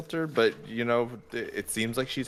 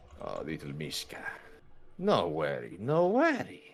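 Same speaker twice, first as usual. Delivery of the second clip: put-on witchy old hag voice, low, slow, sing-song; 6 semitones lower, 4 dB quieter than usual. Voicing a hag who soothes a flinching Mishka: hag character voice. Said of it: "you just hear".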